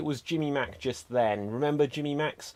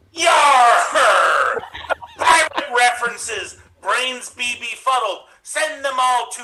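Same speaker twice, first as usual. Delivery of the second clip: put-on pirate voice, higher and louder; 9 semitones higher, 11 dB louder than usual. Recreating another player's pirate performance in thirty seconds: imitating Jen's pirate act. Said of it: "you're just recreating Jen".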